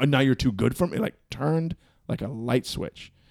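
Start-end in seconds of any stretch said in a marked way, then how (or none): 0.0-1.0 angry yelling man voice. Retelling how a drunk fan reacted to being told to wait: imitating an angry yelling man. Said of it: "starts yelling at me".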